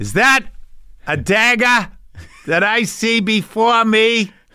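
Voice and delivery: bad Boston accent, very high-pitched and slow. Retelling playing Macbeth in summer theater: horrible Boston accent. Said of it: "I had that horrible Boston accent".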